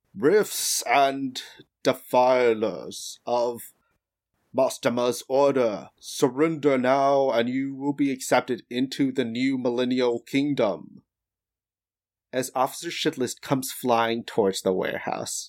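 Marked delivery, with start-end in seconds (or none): 0.2-11.0 slow, grand, declaiming public tone. Voicing a figure heard by all three of you, booming voice. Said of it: "hear the booming voice".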